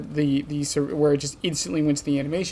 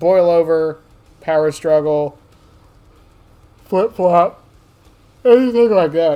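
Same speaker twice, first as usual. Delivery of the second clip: very loud words spoken through a mid-sentence yawn; 9 dB louder than usual. Explaining a rule about killers and survivors, the speaker talks through a yawn. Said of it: "I apologize, I'm yawning".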